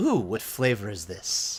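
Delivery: gentle, easy speaking manner. Game master voicing a character who smiles and speaks, soft gentle voice. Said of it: "more of a soft, gentle".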